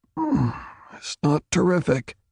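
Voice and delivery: grudging, clenched-teeth voice. Reading fiction aloud, voicing an injured character: speaking through clenched teeth. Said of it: "he admitted through clenched teeth".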